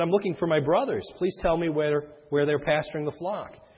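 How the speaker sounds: ordinary talk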